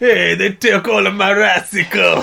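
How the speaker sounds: creaky, raspy, slow, high gangster voice. Voicing the Rice Man as a gangster astronaut: Rice Man gangster astronaut voice. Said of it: "That's how he talks".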